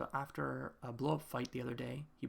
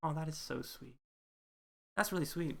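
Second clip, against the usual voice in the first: emotional, moved, teary voice near tears; 3 semitones higher, 3 dB louder than usual. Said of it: "I don't know why I'm tearing up".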